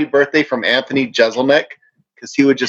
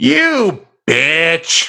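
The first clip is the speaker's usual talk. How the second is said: stretched, drawn-out, contemptuous and disdainful delivery; 4 semitones higher than usual. Showing an actor how a line should go, drawn out with disdain. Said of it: "draw it out a little bit with some feeling".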